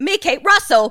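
Cockney-sounding voice. Trying again to say a name in an accent: Cockney accent. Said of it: "No, that was Cockney".

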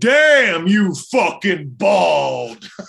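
play-acted booming shout, "bald" drawn out. Retelling a voice that called out to the group from behind: booming voice. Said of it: "this booming voice comes out of nowhere".

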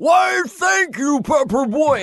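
high, slow, shouted, belted-out delivery. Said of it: "But on the air show, [name] went".

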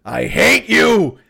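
play-acted, rough, shouted outburst. Retelling a TV scene where a woman yells from the shower, imitating a yell. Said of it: "She totally yells it from inside the shower".

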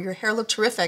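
plain

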